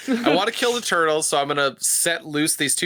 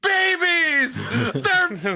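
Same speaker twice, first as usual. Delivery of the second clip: put-on furious shouting villain voice, higher; 13 semitones higher than usual. Retelling a movie scene where Shredder runs out: imitating Shredder furious. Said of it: "He's just, like, so pissed off".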